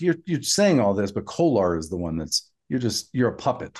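ordinary delivery

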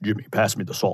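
low, soft radio announcer voice.

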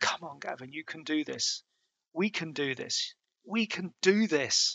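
put-on scratchy whisper. Gavin retells what Will whispered into his ear, imitating a scratchy whisper. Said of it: "whisper into my ear in this kind of scratchy voice".

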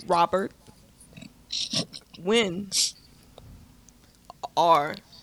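very slow, low, drawn-out, long gaps between words. Mocking how the actors in the Doobie movies talked, imitating very slow movie dialogue. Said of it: "They would talk like this".

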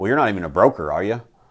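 play-acted snooty, condescending, talking-down tone, fast. Retelling someone's very first comment to you, very condescending. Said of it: "Like, very condescending".

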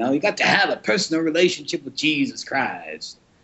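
sunday radio preacher voice. Stressing personal relationships, the speaker imitates a Sunday-morning radio preacher: WNAX radio preacher voice. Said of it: "sounding a little bit like the preacher on WNAX on the radio".

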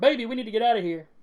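very high-pitched character voice, yelling. Voicing a character telling Skyscraper to flee: character yelling. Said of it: "she yells at Skyscraper".

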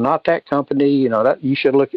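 ordinary talk, nothing marked

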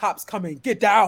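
action-movie strongman voice. Imitating a GPS voice set to Arnold Schwarzenegger: Arnold Schwarzenegger impression. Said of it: "Especially if you on Arnold Schwarzenegger, he be like".

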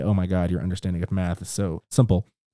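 plain

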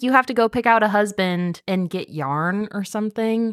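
ordinary talk, nothing marked

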